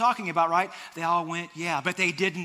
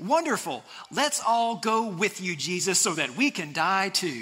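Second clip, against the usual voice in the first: dry, fake cheerful, sarcastic, swooping sing-song. Retelling Thomas answering Jesus about going back: imitating a sarcastic tone. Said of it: "the spiritual gift of sarcasm".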